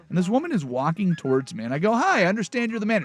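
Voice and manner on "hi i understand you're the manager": very bright, cheerful, pitched-up acted voice. Retelling meeting a store manager, the speaker acts out greeting her cheerfully. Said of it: "Very cheerful".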